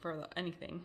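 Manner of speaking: ordinary delivery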